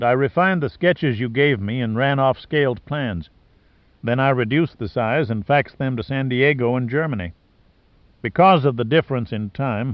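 plain reading voice

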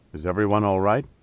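ordinary delivery, nothing marked

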